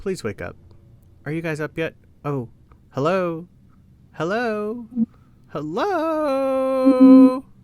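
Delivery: small, tiny, high voice with drawn-out "hello". Telling a story, the speaker voices someone calling from a room: tiny voice. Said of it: "you just kind of hear a tiny voice go".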